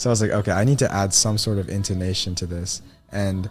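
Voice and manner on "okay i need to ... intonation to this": ordinary talk, nothing marked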